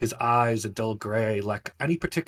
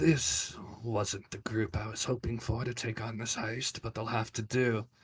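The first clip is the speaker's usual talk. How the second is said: muttering under the breath, much quieter; 5 dB quieter than usual. Flipping through the parchment of heist recruits, he is muttering under his breath. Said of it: "he mutters under his breath".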